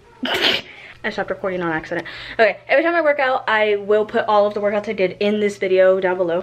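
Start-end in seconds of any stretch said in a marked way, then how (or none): 2.3-3.5 rushed, very fast rattled-off chatter. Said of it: "I'm talking way too fast".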